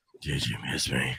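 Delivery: very breathy, very low and soft tone. Telling a friend how they said the text they sent her, very breathy. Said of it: "I said it in a very breathy tone".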